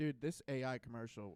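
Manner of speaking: normal talking voice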